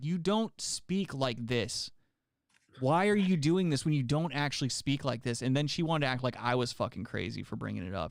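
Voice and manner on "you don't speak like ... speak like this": fed-up, exasperated, done-with-it tone. Retelling confronting a customer about her put-on voice: own fed-up outburst. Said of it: "one day I just got fed up".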